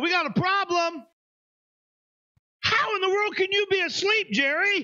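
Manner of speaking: put-on emphatic high pitch. Acting out what one would say in a sinking boat: acting out a slightly raised, emphatic voice. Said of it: "I think I'd raise my voice a little bit".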